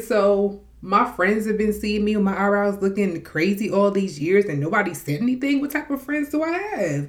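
outraged, high, loud, disbelieving rant.

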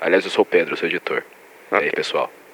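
fake, very low, grave, deep voice. Introducing himself as the editor to the listeners: put-on deep voice. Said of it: "Uma voz grave".

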